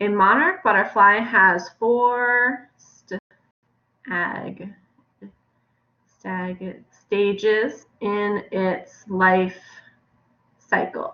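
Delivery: very slow, halting, word-by-word reading. Reading a sentence aloud for the first time, still figuring out the words, reading slowly. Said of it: "I was going kind of slow".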